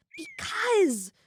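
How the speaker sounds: very high, small creature voice, tiny and insistent squeak. Narrator reading the creature Jan's reply to you: tiny creature voice. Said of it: "insists the creature in a tiny voice".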